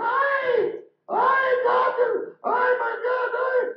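very high, loud, slow, drawn-out screeching. Retelling a woman at a cemetery who sees a tattoo, mock screeching like a yiddish seagull. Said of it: "she began screeching like a Yiddish seagull".

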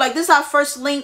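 ordinary talk, nothing marked

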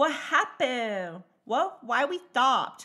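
put-on high small child voice with questioning tone. Retelling a child's questions on a stuck monorail: imitating a child's questions. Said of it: "Endless questions from her".

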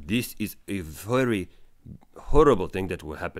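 clumsy, bad put-on Russian accent. Imitating the Russian scientists' warning, attempted Russian accent. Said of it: "I don't know how to do a Russian accent".

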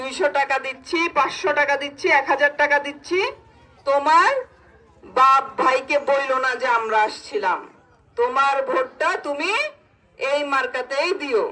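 ordinary talk, nothing marked

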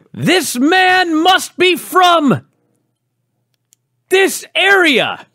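high, very slow, drawn-out scream. Retelling a line someone screamed while in character: imitating someone screaming. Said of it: "And he screams".

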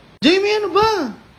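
loud, high-pitched yell.

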